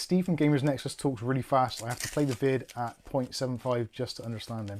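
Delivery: normal talking voice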